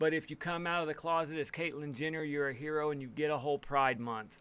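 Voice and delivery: ordinary talk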